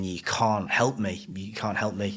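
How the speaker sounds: acted-out crying while pleading. Recounting a breakdown, repeating what they said to everyone, retelling a sobbing plea. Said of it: "I'm just like sobbing, saying".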